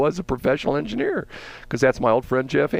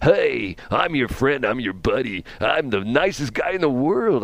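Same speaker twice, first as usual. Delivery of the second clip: friendly, put-on, smiling radio DJ patter voice. Act out a guy talking on the air, putting on a smile in the voice. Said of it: "I got a smile in my voice".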